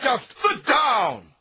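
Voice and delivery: loud, slow, furious shout. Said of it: "Why are you getting angry?".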